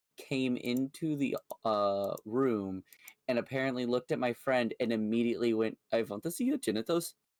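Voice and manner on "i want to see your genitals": put-on thick, heavy Indian accent, fast and high. Retelling a doctor walking into a friend's room: heavy indian accent. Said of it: "very, very heavy um Indian accent".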